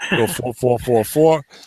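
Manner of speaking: each four said in a New York accent. Reading out a team's fours for a listener who likes his New York accent. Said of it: "he gets to hear my New York accent".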